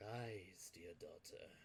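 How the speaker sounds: low, hushed sultry voice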